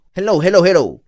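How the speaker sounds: voice like inhaled helium. Speaker tries out a voice that sounds like helium. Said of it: "it sounds like I have helium".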